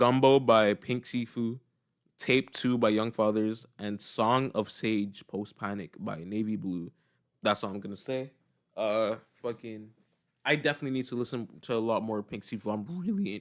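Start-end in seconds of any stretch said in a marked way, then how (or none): 12.7-13.4 high voice cracking mid-word. Talking about wanting to hear more of an artist: voice cracking. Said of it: "my voice cracked".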